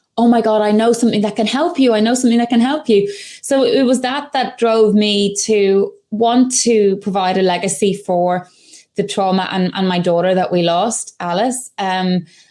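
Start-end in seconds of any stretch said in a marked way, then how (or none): 0.2-3.1 acted, rushed, urgent, insistent outburst. After seeing people share their anxiety, retelling screaming at the phone. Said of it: "I'm screaming at my phone going".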